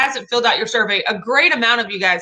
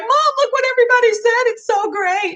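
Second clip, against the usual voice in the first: mock emotional voice, pitched very high; 13 semitones higher than usual. Retelling a message to mom about the survey responses: emotional voice. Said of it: "that's my emotional voice".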